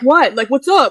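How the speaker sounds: put-on aggressive, confrontational tone. Retelling how a man who blocked her in squared up to her, mock-confrontational challenge. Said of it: "trying to like square up with me".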